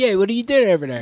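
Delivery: put-on casual, high-pitched Philadelphia accent. Showing what a philly accent sounds like: philly accent. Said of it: "Philly accent's like Pennsylvania Dutch".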